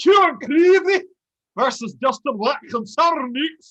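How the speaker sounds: high, loud, bad Irish accent. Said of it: "on behalf of the Irish people".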